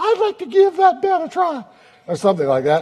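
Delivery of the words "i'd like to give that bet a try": small squeaky voice, pitched way up high. Telling of a scrawny man taking a bartender's bet, tiny squeaky voice. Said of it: "in a tiny, squeaky voice".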